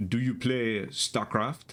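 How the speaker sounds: odd, weird put-on French accent. Imitating an acquaintance who was into soccer and StarCraft: weird French accent. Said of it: "kind of like weird French accent".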